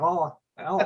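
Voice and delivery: high, mock shocked, startled woman's scream. Retelling how a lady reacted to a fallen artificial foot: imitating a woman screaming. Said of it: "starts frickin' screaming like".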